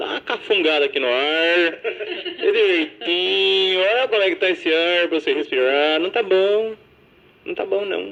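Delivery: mock caipira countryside accent. Retelling how a caipira character speaks, in a rural São Paulo caipira accent. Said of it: "ele é caipira, ele tentou num sotaque do interior de São Paulo".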